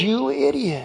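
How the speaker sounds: muttering under breath. Retelling cursing another driver while angry at him: muttering under breath. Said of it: "under my breath".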